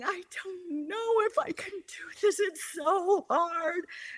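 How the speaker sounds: put-on crying out words, very high, sobbing. Retelling a phone call home to her husband: retelling own sobbing. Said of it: "sobbing and saying".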